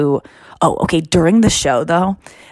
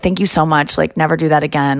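put-on muttering under the breath. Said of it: "kind of under my breath".

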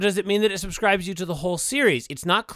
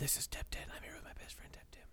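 soft, whispered delivery. Prompting a co-host with the podcast intro lines: whispering. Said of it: "I'm going to whisper to you what to say".

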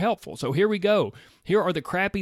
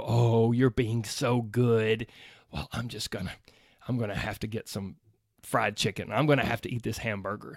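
put-on condescending voice, much lower pitch; 6 semitones lower than usual. Acting out what you say to a fit friend ordering healthy food, mock-condescending. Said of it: "food shamed them for being so good with a condescending voice".

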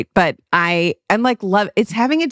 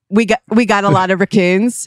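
put-on Philadelphia accent. Imitating an East Coast person: imitating a Philly accent. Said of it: "that's kinda Philly".

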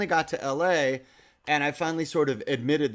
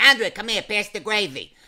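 put-on New Jersey gangster accent; 7 semitones higher, 6 dB louder than usual. Retelling how his cousins talked to him, talking like the Sopranos. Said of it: "they all talk like the Sopranos".

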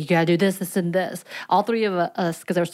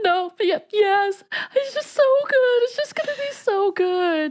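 put-on teary, overwhelmed, pitched-up gushing. Retelling how Annie reacted before the ride, imitating Annie crying. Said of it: "Annie, are you crying?".

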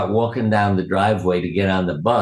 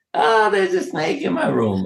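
mock very high, wavering, shrill, swooping scream; 10 semitones higher than usual. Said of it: "we heard Carolyn screaming".

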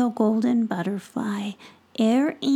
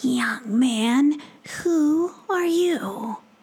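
mother possum creature voice, storybook style; 2 semitones higher than usual. A narrator reads the mama possum asking Tom a question, in her possum voice. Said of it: "asked Tom in her possum voice".

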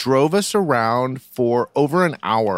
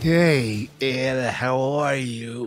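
creepy put-on voice, quieter; 4 dB quieter than usual. Greeting a fellow performer during a comedy bit, in a scary voice. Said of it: "That voice, the scary voice".

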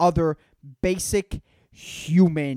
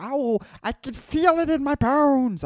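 put-on very high, slow, drawn-out elderly voice; 10 semitones higher than usual. Ranting about old people, the speaker does an old person impression. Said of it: "I don't know why an old person is talking like that".

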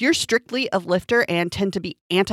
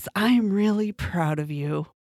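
low, flat deadpan monotone with no feeling. Thanking listeners for playing along, in a Ron Swanson voice. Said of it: "In my Ron Swanson voice".

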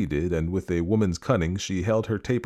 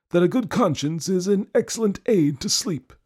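very high, sneering, mocking tone; 12 semitones higher, 3 dB louder than usual. Narrator reading a man's reply to a woman who could not sleep, mocking. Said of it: "in that same mocking kind of voice".

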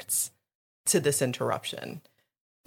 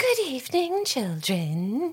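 put-on high, breathy, childlike, girlish tone; 8 semitones higher than usual. Asked for their best British Dolores Umbridge, breathy girlish Dolores Umbridge voice. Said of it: "she has this breathy, girlish voice".

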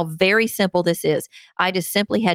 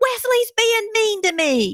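very high, dramatic, swooping tattletale wail. Speaker re-enacts Alex tattling on Wesley, imitating Alex screaming. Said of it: "she screams at the top of her lungs".

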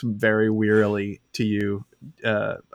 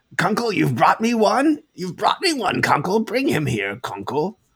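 very high, swooping, calling-out gnome voice; 9 semitones higher than usual. Storyteller voices a gnome calling to its bat, gnome calling out. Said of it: "the gnome calls out".

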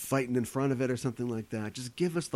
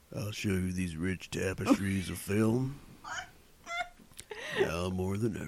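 deep, swooping put-on voice; 5 semitones lower than usual. Speaker offers to imitate a director whose films they discuss, impression of a filmmaker. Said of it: "I think I can do a good impression of him".

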